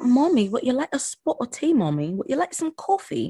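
put-on little kid's high, sing-song British accent. Mother imitates her son talking to her in his British accent. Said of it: "my son on there doing a British accent".

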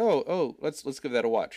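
ordinary talk, nothing marked

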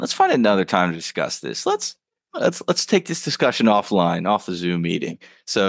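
ordinary talk, nothing marked

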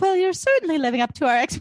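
put-on high, loud British accent. Recapping a scene, quoting Lily: Lily's line in British accent. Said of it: "why is she British?".

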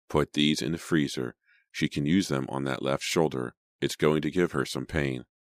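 plain reading voice

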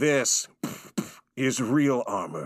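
put-on, very dramatic knight character voice. Doing one of the knights who laughed at Finn, dramatic knight voice. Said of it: "Very dramatic voice".

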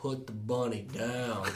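dramatic, big, dead-serious, grave delivery. Quoting a movie line to laugh at it: imitating Nick Cage being dramatic. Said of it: "Even when he's trying to be dramatic and he goes".

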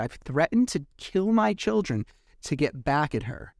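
ordinary delivery

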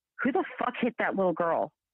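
mock outraged, angry, cursing outburst. Retelling a husband's reaction on seeing a photo: imitating an angry husband. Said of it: "And he was angry".

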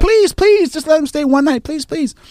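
shrieked, very high-pitched, screaming pleading tone. Retelling how a kid screamed a plea to stay over: imitating a screamed plea. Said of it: "They're screaming".

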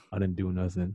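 deep macho voice. Imitating how guys talk in an argument: imitating a lowered manly voice. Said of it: "guys talk lower thinking they're, like, all manly".

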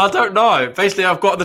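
talking through helpless laughter. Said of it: "I can't stop laughing".

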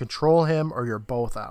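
ordinary talk

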